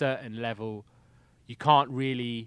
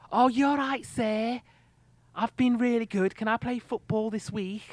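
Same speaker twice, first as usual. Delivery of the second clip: put-on very high-pitched voice with Scouse accent; 10 semitones higher than usual. Recapping Grange Hill and doing Tucker's nephew: Tugger's Scouse accent. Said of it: "with a Scouse accent".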